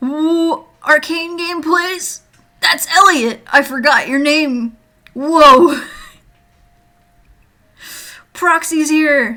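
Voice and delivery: excited eager chatter. Greeting viewers arriving in chat before a game release: sounding excited. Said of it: "I sound so excited".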